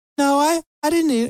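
voice shooting up suddenly to a very high pitch. Acting out a child answering a parent's question, voice jumping up in pitch. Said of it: "their voice goes up an octave or two".

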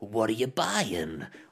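put-on cockney-accented voice. On a podcast, quoting the merchant from Resident Evil 4 as an impression. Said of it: "this is a cock-on impression".

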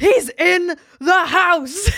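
play-acted shocked gasp, very high, slow, drawn out. Retelling a gasp at a reveal to another viewer: retelling a gasped exclamation. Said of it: "I literally gasped".

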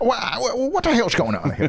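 imitated Tennessee voice. Telling a javelina story, the speaker quotes the deputy: Tennessee accent. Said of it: "That sounds a lot like your Tennessee voice".

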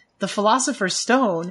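ordinary talk

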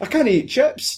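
put-on broadest thick Scottish accent, pitched very high. Retelling how a man turned to the camera in a vampire scene, thick Scottish accent. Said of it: "in the most Scottish accent".

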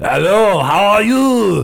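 put-on very slow, heavy, drawn-out French accent. Retelling how a returning acquaintance greeted everyone: imitating Craig's French accent. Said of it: "he was, like, super French".

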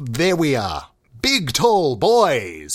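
put-on swooping, slow, excited announcer voice, drawn-out "boys". Host demonstrates how a show usually opens, with an excited intro. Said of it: "ignite itself with excitement and exhilaration".

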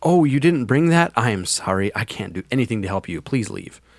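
put-on, pointedly polite, extra passive-aggressive tone. Asked for an example, the speaker acts out what they would say, mock passive-aggressive. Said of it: "how passive aggression looks".

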